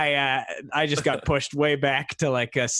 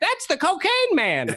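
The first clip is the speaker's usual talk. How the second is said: put-on, very high-pitched old-lady voice; 14 semitones higher than usual. Retelling what old ladies at Safeway would say: imitating old ladies. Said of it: "old ladies at Safeway be like".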